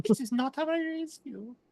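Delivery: put-on very high-pitched elderly woman voice. In a role-played scene, the queen dowager character speaks in an old lady voice. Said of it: "we've kind of been doing like an old lady voice".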